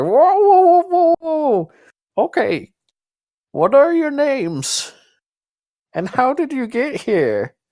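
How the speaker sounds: put-on very high, swooping elderly woman voice. Voicing a very old lady questioning strangers: very old lady voice. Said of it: "She's like".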